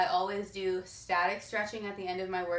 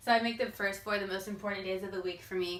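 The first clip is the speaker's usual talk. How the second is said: ordinary talk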